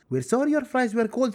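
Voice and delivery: ordinary talk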